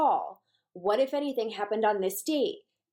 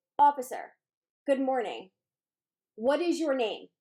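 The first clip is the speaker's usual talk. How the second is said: play-acted mechanical, rote, by-the-numbers delivery; 3 semitones higher than usual. Demonstrating how jurors question an officer from the podium, imitating monotone rote questioning. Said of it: "it's monotonous and it's rote".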